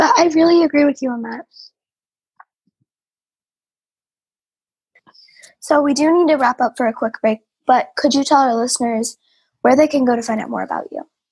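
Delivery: hoarse, fading voice. Asking a guest where listeners can find out more, losing voice. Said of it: "I'm losing my voice today".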